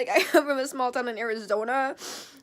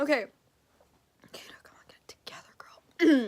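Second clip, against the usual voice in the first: steadying voice through held-back tears. Telling viewers about feeling unsafe, trying not to cry. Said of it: "I'm trying not to cry".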